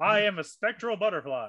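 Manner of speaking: ominous, imposing, menacing, intimidating delivery. Playing a spectral butterfly introducing itself, in an intimidating voice. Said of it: "Why does the butterfly have such like an intimidating voice?".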